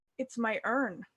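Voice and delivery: mock solemn, grave, dead serious tone. Acting out a character answering a woman who asks what she made: very serious tone. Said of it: "look up really seriously".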